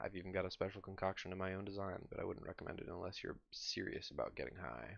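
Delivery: hushed, soft, secretive half-whisper. A seller leans toward a customer, lowering his voice to a conspiratorial half-whisper. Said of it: "lowers his voice to a conspiratorial whisper".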